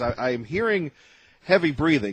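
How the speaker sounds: ordinary talk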